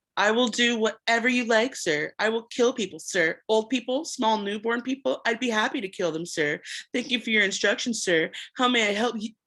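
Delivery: cutting sarcastic voice. Narrator reads Jonas mimicking the voice's replies; cruel, sarcastic mimicking. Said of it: "Jonas mimicked in a cruel, sarcastic voice".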